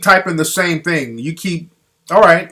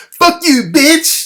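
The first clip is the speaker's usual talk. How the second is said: squeaky, very high-pitched put-on voice; 11 semitones higher than usual. Mocking a caller who just phoned in, imitating a high-pitched voice. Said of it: "With that high-pitched ass voice".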